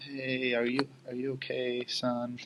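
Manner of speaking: slow, pitying, mock sympathetic motherly voice. Imitating mom calling after a bad day: imitating mom's pitying tone. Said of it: "you could tell her tone is, like, feeling bad".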